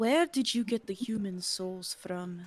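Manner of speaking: secretive, hushed half-whisper. In a role-play scene, a character questions another character; half-whispering. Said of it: "She whispers this".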